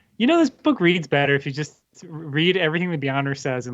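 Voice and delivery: ordinary talk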